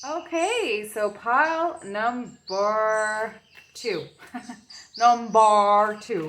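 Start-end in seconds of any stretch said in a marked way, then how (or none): 5.0-6.3 loud, thick, big Irish brogue. Moving on to pile number two in a reading, big irish brogue. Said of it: "with my lovely Irish accent, my big brogue".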